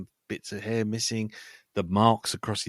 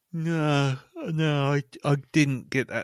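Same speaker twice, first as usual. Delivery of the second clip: talking through a yawn, higher; 5 semitones higher than usual. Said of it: "sorry, I was yawning".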